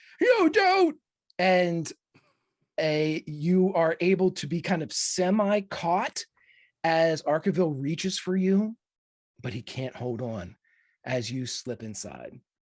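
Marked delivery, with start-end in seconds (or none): 0.2-1.0 shrill, very high-pitched, loud yell. Voicing a character who sees someone dive through: yelling as Arkaville. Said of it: "you hear Arkaville yell out".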